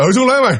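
very fast, rapid-fire, rattled off in one rush. Showing how a line was said too fast to recognize: very fast speech. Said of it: "nói nhanh nè".

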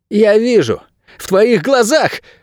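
very high, shrill, piercing squeal. A man facing a boy who aims a bow at him, shrieking. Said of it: "взвизгнул он".

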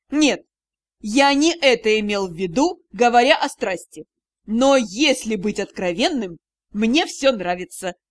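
low, teasing, derisive, mocking tone. Rian answers the narrator bursting into the director's office: mocking. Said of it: "чтобы услышать насмешливое".

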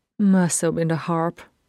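ordinary delivery, nothing marked

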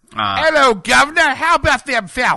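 loud, slow booming voice drifting into a Cockney accent. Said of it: "You had every word of that just fine until you got to Falcons".

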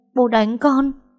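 quavering, trembling, shaken voice, pitched high. Lan, holding her cheek after her father hits her, asks him, trembling voice. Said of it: "giọng run run hỏi ông ta".

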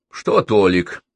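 grumbling voice. Archie answers the narrator's question about Tolik, grumbled. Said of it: "буркнул Арчи".

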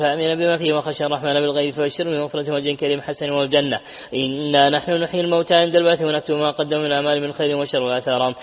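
plain

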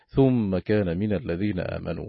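ordinary talk

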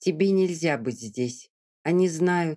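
ordinary delivery, nothing marked

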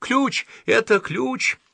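high-pitched joyful exclamation. She suddenly brightens, looks at the monk and cries out, joyful exclamation. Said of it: "радостно посмотрела на монаха и воскликнула".

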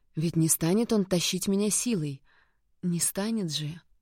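ordinary delivery

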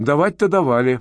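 ordinary delivery, nothing marked

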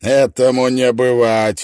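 smirking, with an audible smirk. Narrating a man answering a woman who just called him a bastard, smirking. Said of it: "ухмыльнулся он".

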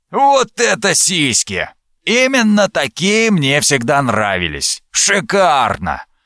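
smug, self-satisfied, relishing sing-song tone. Narrator reads a captor speaking over a captive girl; smug voice. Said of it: "услышала самодовольный голос рубоядца".

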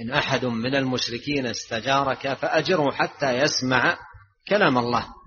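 ordinary talk, nothing marked

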